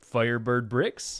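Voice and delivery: mock radio announcer voice, loud, wide-ranging pitch.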